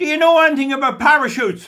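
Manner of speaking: loud, very high yelled shout. Retelling calling out to a man going up as he came down, re-enacting a shout. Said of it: "And I shout to him".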